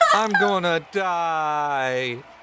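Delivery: put-on tearful, high crying-child voice, die drawn out. Describing a child who looks you in the eye and cries harder: imitating a crying child. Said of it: "starts crying even h- harder and goes".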